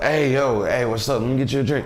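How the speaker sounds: put-on cocky drunk voice. Retelling chatting up a woman while drinking Hennessy: imitating own overconfident self. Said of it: "I was like".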